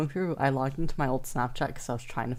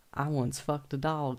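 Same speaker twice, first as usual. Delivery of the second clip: put-on southern US accent. Retelling what they said aloud at high school while recorded, in a southern accent. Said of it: "like in a southern accent".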